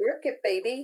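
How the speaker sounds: ordinary talk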